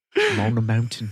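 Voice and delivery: put-on English-sounding accent. Repeating the actor's line back: Orlando Bloom British accent. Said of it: "In his British accent?".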